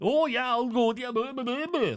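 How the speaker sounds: put-on very high Irish accent with drawn-out "you". Recounting a movie scene, his reply to a woman's invitation: Charlie Hunnam, Irish accent. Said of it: "In that Irish accent".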